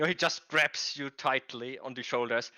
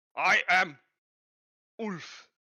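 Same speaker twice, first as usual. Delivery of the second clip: put-on German accent, pitched up; 5 semitones higher than usual. Describing a game character who speaks broken Elvish, voicing Ulf with a German accent. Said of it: "why do they have a German accent?".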